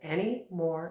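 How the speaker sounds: usual speaking voice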